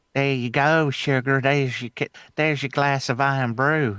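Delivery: Southern US drawl, cartoonish Southern belle voice. Speaker describes the voice they'd like to hear, then demonstrates: Rogue voice. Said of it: "a similar voice to Rogue from the X-Men".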